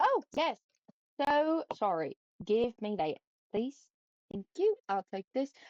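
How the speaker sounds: light, slight British lilt, swooping. Playing a character in a role-play scene; slipping into a British accent. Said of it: "I almost went British for a second".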